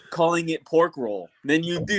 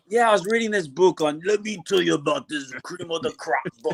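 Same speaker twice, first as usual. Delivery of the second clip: put-on, macho, gravelly pro-wrestler style voice. Imitating a friend who randomly talks like Macho Man: imitating Chad doing Macho Man. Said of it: "this randomly macho man".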